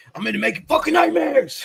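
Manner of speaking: fired-up rant, mild yell, swooping and rising. Retelling a coach's sideline speech from Hard Knocks, imitating Jon Gruden yelling. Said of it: "When you got dudes yelling, screaming like that".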